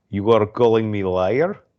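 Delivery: hammed-up, exaggerated, laid-on Russian accent. Retelling a jail arm-wrestling scene, quoting the comeback in a mock Russian accent. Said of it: "his Russian accent uh, was like cracking me up".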